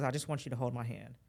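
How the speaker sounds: normal talking voice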